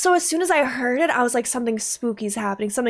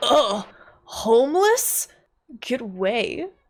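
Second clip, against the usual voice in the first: put-on very slow, drawn-out, disgusted and dismissive. Voicing a film character waving off a beggar, imitating someone's disgust. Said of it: "He looked at him with such disgust".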